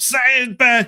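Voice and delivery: mock very high-pitched, pushy, aggressive insistence. Retelling what a friend in South Carolina says: imitating an aggressive demand. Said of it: "It seems to really set you guys off".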